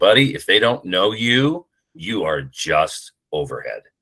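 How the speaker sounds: flat, expressionless tone. Quoting an old line from a public relations specialist; retelling a deadpan line. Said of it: "just deadpan one day".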